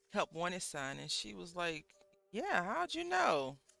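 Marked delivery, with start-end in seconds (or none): 2.3-3.5 acted, very high, loud sarcastic tone. Retelling how she answered the man's job question, retelling a sarcastic reply.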